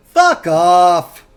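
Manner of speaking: put-on loud, heaviest Jersey accent, "off" drawn out. Acting out a voice heard after a kick at the door, in the heaviest Jersey accent. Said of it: "you just hear the most Jersey accent you've ever heard".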